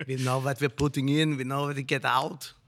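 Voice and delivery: put-on German accent, army colonel style. Describing the brewery's lager beers, joking: German colonel accent. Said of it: "That's his German accent".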